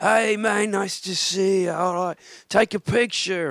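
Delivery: put-on very high, slow, drunk British man voice. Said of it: "this kind of drunk British guy".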